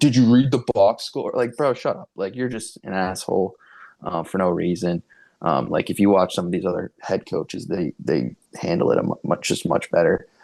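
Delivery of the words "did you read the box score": put-on grumpy, cantankerous old man voice, yelling. Speaker mocks a head coach at a press conference, imitating a grumpy yell. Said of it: "Like he's yelling at reporters".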